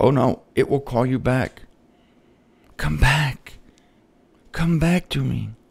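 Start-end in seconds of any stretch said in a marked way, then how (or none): 2.8-5.5 low, sexy, seductive little voice. Voicing sin calling the listener back to it, in a sexy little voice. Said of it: "It'll put on a sexy little voice".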